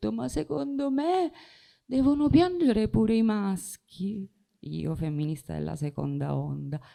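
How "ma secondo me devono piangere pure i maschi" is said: very high-pitched, tearful crying voice. Recounting own reply after being told not to cry, retelling speaking through tears. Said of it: "E io fra le lacrime gli ho detto".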